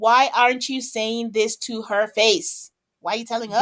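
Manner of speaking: ordinary talk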